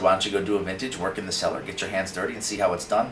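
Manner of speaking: ordinary talk, nothing marked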